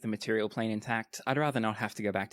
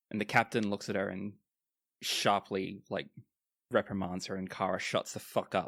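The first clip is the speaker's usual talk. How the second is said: normal talking voice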